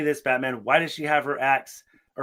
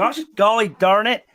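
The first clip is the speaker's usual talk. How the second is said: mocking put-on talk, higher and louder; 8 semitones higher, 6 dB louder than usual. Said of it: "The Mormons of this universe ... they're like".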